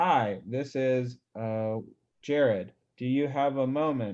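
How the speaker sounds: very slow, halting, stilted read-off-the-page delivery. Speaker showing cold callers how not to sound on the phone: reading off a script. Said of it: "we don't want to sound like".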